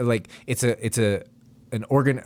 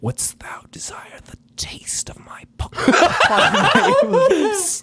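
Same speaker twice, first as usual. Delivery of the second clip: put-on devil voice, slow and loud; 5 dB louder than usual. Playing a devil out looking for witches at Halloween: put-on devil voice. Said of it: "you are way too good at that voice".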